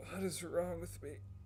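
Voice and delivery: put-on high, strained, pained voice of sickly boy.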